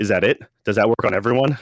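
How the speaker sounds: mock-deadpan, flat delivery. Retelling how she answered him, imitating someone deadpan. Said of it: "she just looks at him deadpan".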